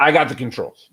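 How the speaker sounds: contemptuous, disgusted tone. Retelling an instructor taking over the plane: imitating a disgusted instructor. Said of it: "He just said with disgust".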